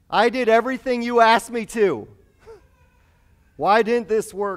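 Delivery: very high-pitched, shrill, very loud yell. Voicing a lament to the god of hosts; acting out a yell. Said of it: "I'm yelling too loud".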